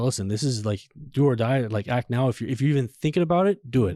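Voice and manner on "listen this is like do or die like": plain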